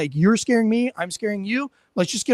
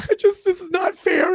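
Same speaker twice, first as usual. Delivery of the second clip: words sobbed out through mock tears; 10 semitones higher than usual. A man retells how a guy he made sit down started to cry: imitating someone crying. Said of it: "he starts to cry".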